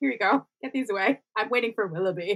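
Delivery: impatient, dismissive, offhand and uninterested. Retelling how Marianne hands off the flowers at once: imitating Marianne. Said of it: "she's literally just like".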